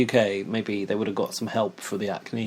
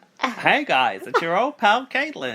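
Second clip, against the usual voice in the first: very high, sing-song, swooping put-on voice; 10 semitones higher than usual. Answering a request to do the Caitlin impression: Caitlin impression. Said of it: "I've lost my Caitlin impression. Come on".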